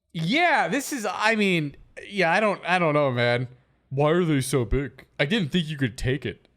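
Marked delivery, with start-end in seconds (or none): 3.9-6.4 creepy put-on killer voice. Asking about the items; the other says it sounds like Buffalo Bill. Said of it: "you sound like Buffalo Bill".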